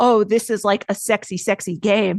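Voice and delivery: normal talking voice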